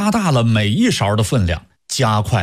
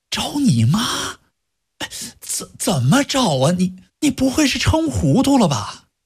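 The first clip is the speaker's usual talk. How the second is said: very high voice, faintly quavering and trembling; 13 semitones higher than usual. Reading a story, the narrator voices a character's question in a slightly trembling voice. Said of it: "用微微发颤的声音问他".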